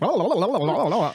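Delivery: high, sped-up "la la" babble, like fast tape. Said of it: "put it, like, two X, you know, speed".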